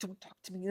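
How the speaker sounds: mock very quiet, angry, dismissive tone. Retelling what mom said after a bad haircut: imitating mom being mad. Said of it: "she was mad".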